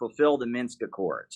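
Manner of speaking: ordinary talk, nothing marked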